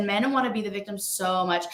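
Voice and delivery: ordinary talk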